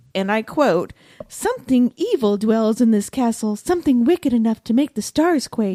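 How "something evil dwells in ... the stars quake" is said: high, ethereal, floating ghostly voice. Quoting a ghost's warning from a book: imitating Elena's ethereal voice. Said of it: "I like that voice".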